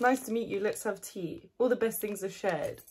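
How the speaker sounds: usual speaking voice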